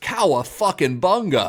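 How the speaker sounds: high, swinging, lilting delivery. Retelling an actor's line after a near miss: imitating Kurt Russell yelling. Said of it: "Kurt Russell voice yelling".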